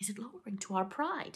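ordinary delivery

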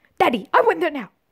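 put-on spoiled child voice. Trying again to get the voice right, doing Veruca's spoiled bratty voice. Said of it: "I just need to get the voice".

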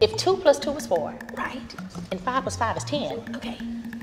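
mock calm, reasoning tone breaking into an outburst.

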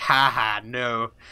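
acted, heavily sarcastic delivery. The speaker recalls how others answered their thanks, retelling a sarcastic reply. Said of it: "really sarcastically".

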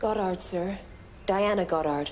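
low-pitched Irish-sounding accent. A character gives her name when asked, in an Irish-sounding accent. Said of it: "She sounds so Irish".

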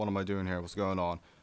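ordinary talk

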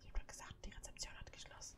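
hushed whisper. A streamer calling for Thomas in a haunted hotel game, whispering. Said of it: "warum ich flüstere".

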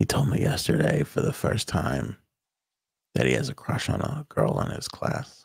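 soft, hushed, confiding whisper. Sharing his son's secret about a crush on a girl, whispering. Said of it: "I have to whisper this".

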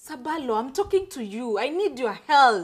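shouting. Begging Sirbalo for help and repeating yourself, shouting. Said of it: "you are shouting on me".

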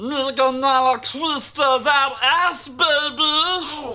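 very slow cartoon creature voice, drawled, stretched-out "baby". Asked what fans request, a co-host answers in a Stitch impression. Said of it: "is it not a good impression?".

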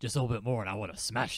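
raspier put-on character voice. Voicing a game character to make them sound different, raspier character voice. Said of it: "I'm getting, like, raspier in an attempt to make them sound different".

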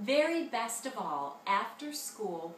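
ordinary delivery

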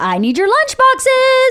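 shrill, high, swooping yell carrying far. A speaker shows the other speaker how they call out at home, acting out a yell. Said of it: "that's yelling".

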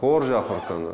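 main stress placed on хорж. Explaining logical stress with an example phrase: main stress on хорж. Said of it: "Давайте возьмем хорш... Если мы так произнесем".

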